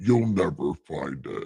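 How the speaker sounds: very low, hushed, soft put-on voice. Joking about Atlantis being lost in the ocean, in God voice. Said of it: "says God in God voice".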